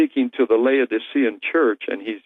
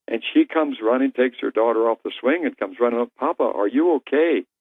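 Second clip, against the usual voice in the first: normal talking voice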